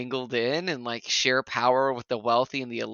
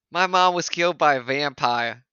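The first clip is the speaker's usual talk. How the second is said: loud, put-on Boston accent; 2 semitones higher, 5 dB louder than usual. Imagining how the show's character would sound, in a boston accent. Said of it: "kind of wish he had a Bostonian accent".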